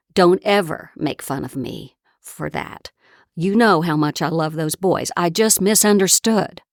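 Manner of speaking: very strong, stern, enraged, forceful scolding tone. Retelling the mother's rebuke after everyone laughed: imitating a very strong, angry voice. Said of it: "in a very strong voice she said".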